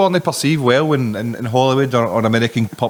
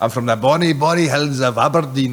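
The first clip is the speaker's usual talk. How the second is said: put-on Scottish accent. Recalling a TV episode, quoting the character, in a Groundskeeper Willie Scottish accent. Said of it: "Remember that accent?".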